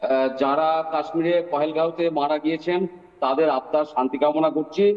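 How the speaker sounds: low, slow, affected crocodile-tear lament. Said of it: "এই ন্যাকা কান্না কাঁদবেন না".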